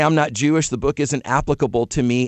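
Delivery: ordinary talk, nothing marked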